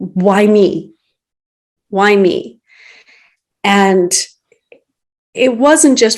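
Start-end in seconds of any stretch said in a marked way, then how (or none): 0.0-2.6 play-acted bawling, very slow and drawn out. Retelling lying in a hospital bed at a low point: retelling own past crying. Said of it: "bawling my eyes out, crying, like".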